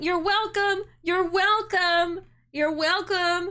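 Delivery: put-on loud yell. Speaker retells people pushing a car out who yelled at Ruuuvo, imitating people yelling. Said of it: "they start yelling".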